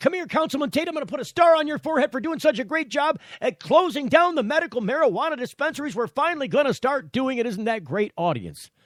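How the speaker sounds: put-on high, gushing, zealous, fervent voice. Mocking how a man praised Councilman Tate: mimicking fervent praise. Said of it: "he says it with such fervor".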